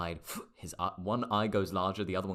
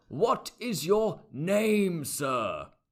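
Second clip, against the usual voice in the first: put-on very high, loud, far-gone drunk voice; 11 semitones higher, 7 dB louder than usual. Narrating a scene, voicing a man who looks down at you, very drunk voice. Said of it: "He's very far gone".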